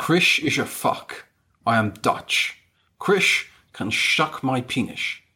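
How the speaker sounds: put-on Scottish accent, slipped into as if by accident. Reading out spirit messages during a séance game, sounding like Sean Connery. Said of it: "That sounded like Sean Connery".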